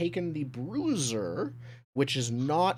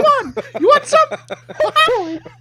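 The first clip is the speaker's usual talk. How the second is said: comically high squeaky mouse voice, higher and louder; 17 dB louder than usual. Voicing a grumpy mouse character greeting the table: comically high mouse voice. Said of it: "comically high voice".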